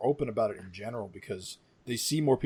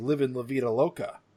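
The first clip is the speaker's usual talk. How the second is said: ordinary talk, nothing marked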